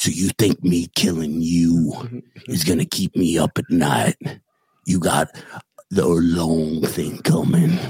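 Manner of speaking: put-on gruff cowboy voice. Imitating a character from the Yellowstone prequel: Sam Elliott impression. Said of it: "That's a Sam Elliott".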